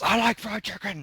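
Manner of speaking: sudden, very high-pitched, shrill yell. Retelling a classmate answering the teacher's question: imitating a classmate yelling. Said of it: "he yells".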